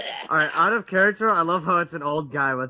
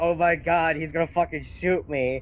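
usual speaking voice

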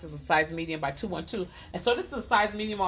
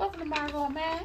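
high-pitched Southern belle voice. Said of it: "I'm doing my Southern Belle voice".

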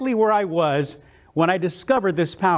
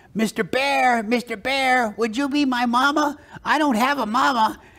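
put-on little cartoon duck voice; 4 semitones higher than usual. Speaker recalls a little duck following a bear in a TV cartoon; little cartoon duck voice. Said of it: "a little duck that was following Yogi around who kept saying".

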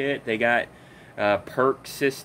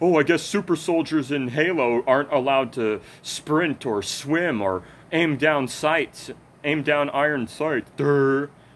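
heavy, sneering, mocking, very sarcastic tone. Complaining about an annoying commenter, quoting his comment in a mocking sarcastic tone. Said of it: "He commented in a very sarcastic kind of tone".

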